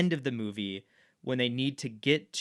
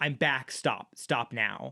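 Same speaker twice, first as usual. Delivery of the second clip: put-on frantic voice. Recounting a comic scene, acting out Batman's frantic cry as he exits the portal. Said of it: "it is a frantic".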